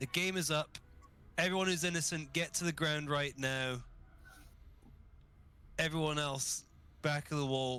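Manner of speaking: high, commanding call projected outward. A tabletop player in character, using magic for a booming voice: shouting at top of lungs. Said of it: "I'm basically going to shout um, out top of my lungs".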